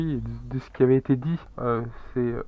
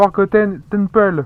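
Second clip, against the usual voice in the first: loud, deliberately awful put-on English accent; 7 semitones higher, 8 dB louder than usual. Saying an english title aloud in the video, bad english accent. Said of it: "c'est un accent anglais euh, à chier comme d'habitude".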